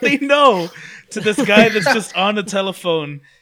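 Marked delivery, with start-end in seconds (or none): 0.0-0.7 sudden high, loud screamed outburst. Retelling a movie scene where a character warns someone: imitating a character screaming. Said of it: "he just screams out".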